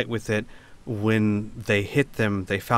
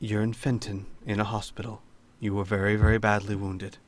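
very soft, hushed delivery; 4 dB quieter than usual. Voicing Al speaking to a badly wounded character: Al speaking very softly. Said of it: "Al will very softly say".

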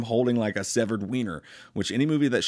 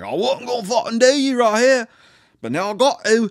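awful put-on Australian accent, very high and loud; 11 semitones higher, 5 dB louder than usual. Retelling a killer's line from a film: awful Australian accent. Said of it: "my awful Australian accents".

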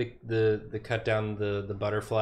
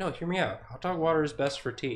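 mock-reasonable tone, pitched higher; 5 semitones higher than usual. Imagining a man on a corner arguing for hot dog water, in a mock-reasoned tone. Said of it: "saying it in like a very reasoned tone".

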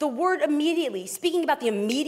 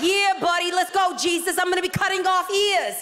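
put-on New Jersey seaside accent; 4 semitones higher, 4 dB louder than usual. Speaker listing Peter's inventory acts him out: Peter in Jersey Shore accent. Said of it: "He's basically from Jersey Shore".

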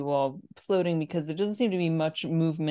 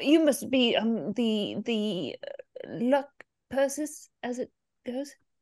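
skittish, jumpy, nervous, much higher pitch; 7 semitones higher than usual. Game master voicing a well-dressed man greeting the newly arrived party, skittish. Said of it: "he's a little skittish".

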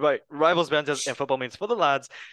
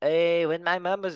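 put-on attempt at a Mexican accent. Try out an accent for a line from your interview, in an attempted Mexican accent. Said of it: "I'm going to try to do the Mexican accent".

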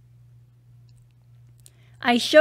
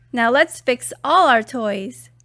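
ordinary delivery

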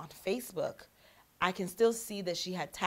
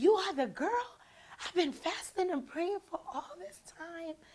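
very high, shrieking with excitement; 11 semitones higher than usual. Retelling a woman screaming and jumping after hanging up the phone, retelling excited screaming. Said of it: "she's screaming, jumping, and she's like".

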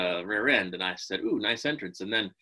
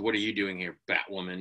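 put-on condescending tone, quieter, faster; 3 dB quieter than usual. Recapping last week's scene, quoting what he says to her, mock-condescending. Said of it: "he's all like condescending and whatnot".

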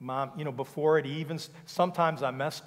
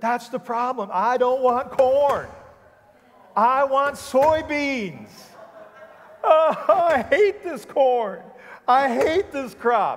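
very high, very loud sobbing, crying speech; 10 semitones higher, 9 dB louder than usual. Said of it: "and he's crying".

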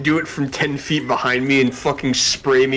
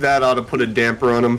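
ordinary talk, nothing marked

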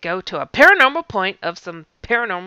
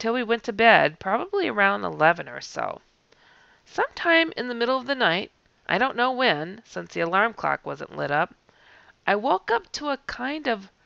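plain

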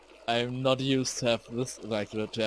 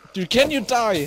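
high, loud, frustrated shouting. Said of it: "I'm sorry for shouting".

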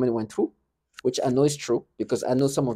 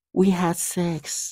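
put-on high, childlike small girl's voice; 5 semitones higher than usual. Mimicking what a childlike individual was just heard saying, childlike voice. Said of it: "I'm gonna mimic her".

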